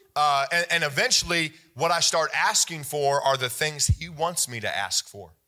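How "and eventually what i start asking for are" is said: ordinary delivery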